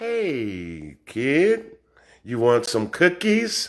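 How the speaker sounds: very low, very slow, soft, silky coaxing sweet-talk. Speaker contrasts his own yelling with how the devil speaks, talking real soft. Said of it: "The devil so- talk real soft".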